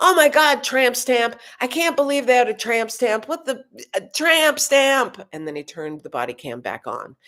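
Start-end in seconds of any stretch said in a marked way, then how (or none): 0.0-5.3 put-on, high-pitched, screaming voice. Retelling what a cop screamed with his body cam off, imitating the scream. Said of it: "he screamed out".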